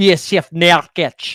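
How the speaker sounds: words spoken in a Scottish accent. During a basketball draft, cheering another team's pick, in a Scottish accent. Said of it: "I don't know why I say it in a Scottish accent".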